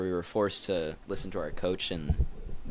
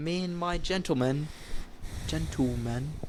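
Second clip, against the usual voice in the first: bad put-on English accent, much higher; 8 semitones higher than usual. Joking about British slang words, bad English accent. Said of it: "I lost my English accent".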